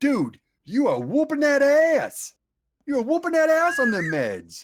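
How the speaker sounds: very high, thick, loud North Carolina drawl. Retelling what a guy from North Carolina kept saying, in a heavy Southern accent. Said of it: "heavy Southern accent".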